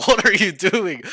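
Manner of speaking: very loud, drawn-out, exasperated and frustrated outburst. Retelling getting frustrated with a player: retelling frustration. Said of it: "getting frustrated too".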